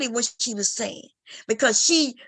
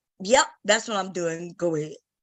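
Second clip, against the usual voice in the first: acted condescending tone, lower pitch; 5 semitones lower than usual. Speaker retells what he said to another man: retelling a condescending reply. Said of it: "I said it in a condescending way".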